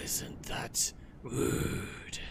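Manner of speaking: slow, drawn-out creature whisper.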